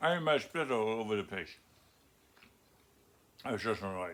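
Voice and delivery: talking with full mouth. Teaching a workshop while eating chocolate, talking with food in mouth. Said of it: "you got good food in your mouth".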